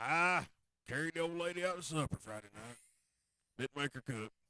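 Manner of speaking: joking put-on old southern man voice. Acting out an old guy at work telling his weekend: put-on old Southern guy voice. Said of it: "his character of this person that he's channeling".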